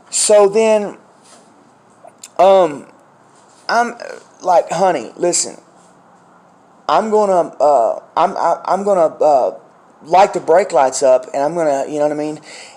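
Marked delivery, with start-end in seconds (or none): none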